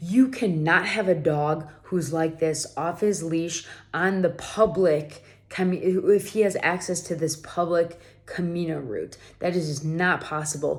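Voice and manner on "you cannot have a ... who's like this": ordinary delivery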